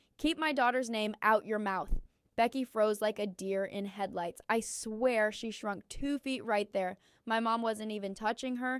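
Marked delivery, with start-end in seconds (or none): none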